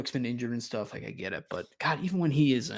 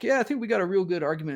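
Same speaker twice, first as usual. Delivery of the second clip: high, earnest, pleading, begging tone; 6 semitones higher than usual. Retelling how a coach argued for a playoff spot: imitating Kirby pleading.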